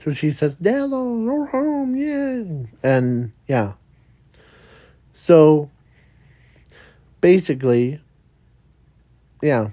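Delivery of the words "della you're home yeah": put-on girl's voice, very high. Retelling a scene, voicing the girl's line, high-pitched girl voice. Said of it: "trying to use the high pitched voice of a girl's voice".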